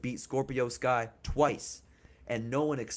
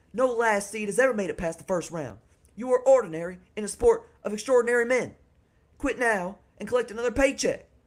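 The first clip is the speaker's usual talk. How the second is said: higher-pitched put-on southern accent; 10 semitones higher, 7 dB louder than usual. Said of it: "Get a little higher with that pitch".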